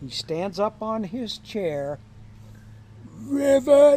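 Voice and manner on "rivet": high, loud frog-like croak. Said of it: "I think I'm a frog".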